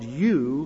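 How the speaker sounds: emphasizing the word 'you'. Reading Saul's words to Samuel from 1 Samuel, with stress on 'you'. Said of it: "the emphasis is on you".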